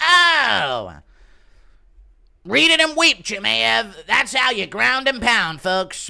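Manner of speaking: very loud, shrill, very high announcer voice, "oh" drawn out. Imitating Joe commentating Raja's crash-out, Joe commentating impression. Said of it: "Impression of Joe commentating".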